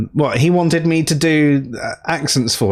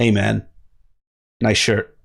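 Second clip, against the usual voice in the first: low put-on American accent; 4 semitones lower than usual. Discussing which accent to use, trying out a put-on American accent. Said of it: "Or should we go for a more".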